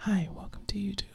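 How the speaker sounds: soft, breathy, whispered ASMR voice. Showing what videos sound like: imitating soft ASMR whisper. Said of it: "it sounds like this".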